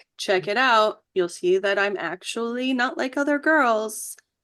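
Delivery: ordinary talk, nothing marked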